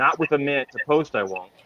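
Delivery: fed-up, annoyed, frustrated tone. Retelling a racetrack clerk's reply to a customer at a busy window: imitating a frustrated clerk. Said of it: "the guy was super frustrated".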